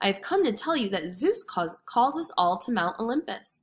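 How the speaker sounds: ordinary delivery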